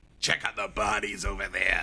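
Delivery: deep, gravelly, soft low murmur. Recapping a movie's opening, the speaker quotes the Master Sergeant: David Shark Freilich's deep, gravelly voice. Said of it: "with this like deep, grovelly like".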